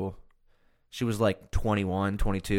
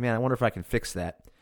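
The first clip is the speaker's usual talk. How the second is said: normal talking voice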